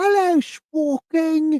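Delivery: put-on British accent. Imitating how a member greets them, in a british accent. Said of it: "is she British?".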